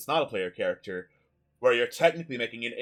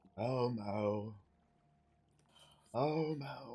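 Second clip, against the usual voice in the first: put-on faint, hushed, slow, drawn-out old man's voice; 11 dB quieter than usual. Describing the buzzing that morphs into a voice from the hive, old man voice. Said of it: "like the voice of this old man saying".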